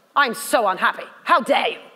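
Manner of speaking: mock displeasure, pretend angry scolding tone. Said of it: "You have to be able to change".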